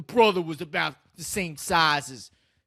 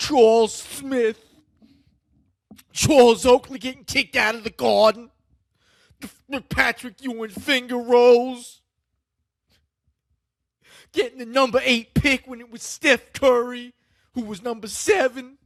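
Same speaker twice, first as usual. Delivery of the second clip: acted tearful, crying speech, pitched higher; 6 semitones higher, 4 dB louder than usual. Speaking in character as Stephen A. Goldsmith about the Knicks: acted crying while talking. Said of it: "I didn't want to come on here and cry".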